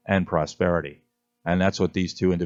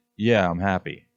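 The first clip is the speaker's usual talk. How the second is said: ordinary delivery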